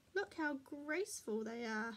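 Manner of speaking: ordinary talk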